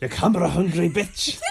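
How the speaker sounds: put-on Scottish accent. Quoting what a man called someone, in a Scottish accent. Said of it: "he did it in like a Scottish accent".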